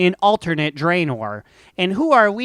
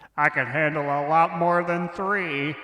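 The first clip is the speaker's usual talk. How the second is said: acted undead monster voice; 5 dB quieter than usual. Playing a lich speaking from his phylactery in a game; Kel'Thuzad voice. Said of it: "classic Kel'Thuzad voice".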